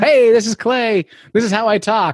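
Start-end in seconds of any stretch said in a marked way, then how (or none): 0.0-1.0 put-on on-air radio DJ announcer voice. Asked for his DJ name, he introduces himself as Clay: radio DJ voice. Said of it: "My radio voice".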